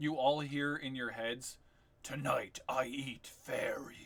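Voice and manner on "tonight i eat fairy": put-on monster voice with full, jowly resonance. Voicing a creature heard in the players' heads: monster voice in heads. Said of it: "But more like in this tone".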